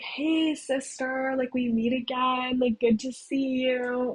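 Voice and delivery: creepy, whiny little voice. Retelling running into Beanies again, in Beanies' creepy whiny voice. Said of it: "He's in there talking in his creepy way".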